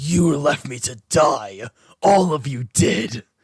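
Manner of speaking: very slow, low, looming, menacing toy voice. Imitating a toy that accuses the listeners: intimidating toy voice. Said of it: "feel more intimidated by".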